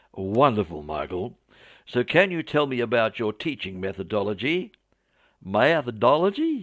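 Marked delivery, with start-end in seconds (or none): 5.5-6.7 put-on clumsy, poor Southern American accent, pitched up. Retelling Michael's reply to a question, in a poor Southern American accent. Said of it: "excuse my poor attempt at a Southern American accent".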